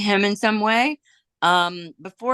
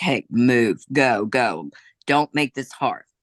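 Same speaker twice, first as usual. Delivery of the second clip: mock deadpan, flat and serious; 4 semitones lower than usual. Retelling how someone threatened a man behind a building, imitating a deadpan threat. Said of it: "deadpan, like just serious".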